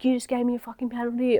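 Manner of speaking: mock angry yelling. Retelling how a rider came back yelling about a penalty: imitating someone yelling abuse. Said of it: "yelling at me and abusing me".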